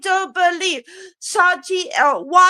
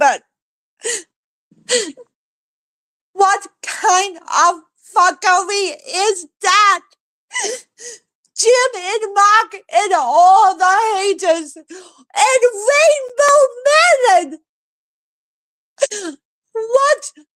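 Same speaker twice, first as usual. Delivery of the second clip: tearful speech, crying while talking; 2 semitones higher than usual. Venting about haters to another speaker, crying while talking. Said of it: "I'm crying because".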